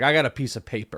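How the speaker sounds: sour, salty, bitter, put-out grumbling tone. Retelling an interview where the player got nothing: imitating someone salty. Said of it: "salty about it".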